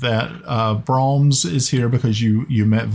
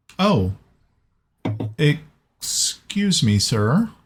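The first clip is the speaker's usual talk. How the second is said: brief stumble, mildly startled, polite apologetic tone; 2 semitones higher than usual. Narrating a game, voicing a man meeting a dwarf for the first time, a little surprised. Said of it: "You can tell he's a little surprised".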